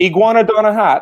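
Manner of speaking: put-on loud, high-pitched West Indian Caribbean accent. Telling a dinosaur pun a friend from the West Indies asks: West Indian accent. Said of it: "All the accents are coming in now".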